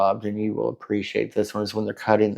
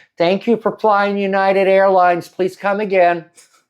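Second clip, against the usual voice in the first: mock, very high, loud shouted yell; 10 semitones higher, 6 dB louder than usual. Retelling what someone in the crowd yelled one night, retelling a yell. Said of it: "somebody one night yelled".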